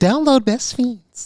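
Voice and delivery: sugary, sweet, high ad voiceover. Teasing the other speaker about how she reads ads, Steph's sweet ad voice. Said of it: "she's got an ad voice".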